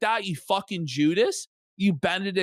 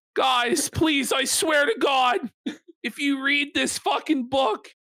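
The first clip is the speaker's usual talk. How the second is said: put-on pleading, much higher pitch; 7 semitones higher than usual. Acting out what a man says to the readers, imitating someone pleading. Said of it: "pleading for anyone to save him".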